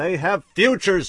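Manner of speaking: very high, very loud, shrill outcry. A man speaks to Rebecca before terrified doctors and technicians, crying out. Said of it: "he cried and stopped".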